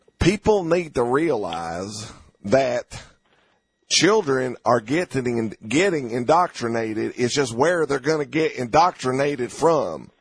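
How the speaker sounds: put-on thick, heavy Mississippi Southern accent. Quoting a guy from Mississippi, in a really thick Mississippi accent. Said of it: "Here's what he said in a really thick accent".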